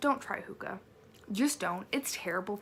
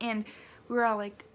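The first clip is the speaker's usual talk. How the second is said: ordinary talk, nothing marked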